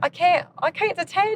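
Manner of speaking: put-on very high-pitched, botched Australian accent. Quoting her over FaceTime saying she can't attend, bad Australian accent. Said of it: "That's not how you do an Australian accent".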